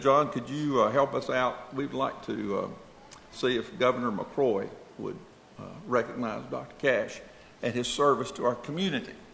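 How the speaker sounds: usual speaking voice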